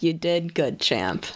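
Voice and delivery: put-on awkward fatherly voice. Mimicking how he sounds, like a put-on awkward dad congratulating his son. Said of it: "He sounds like a father who doesn't know how to like congratulate their son".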